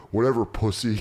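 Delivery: ordinary delivery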